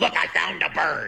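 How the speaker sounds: slow, dragged-out, hoarse, raspy, creaky voice. Ranting about the man in charge, mocking how he talks, imitating a raspy voice. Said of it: "He sounds like he's been throat fucked by a demon".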